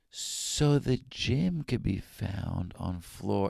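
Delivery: very slow, hushed whisper. Retelling a hotel clerk who starts to whisper the directions at night. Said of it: "But she starts to whisper".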